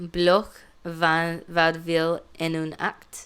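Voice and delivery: put-on French words spoken with a Spanish accent. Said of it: "I'm going to say everything with a Spanish accent".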